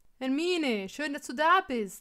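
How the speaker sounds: cheerful called-out voice. Harry, opening the door to hermine: called out cheerfully. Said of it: "rief er fröhlich".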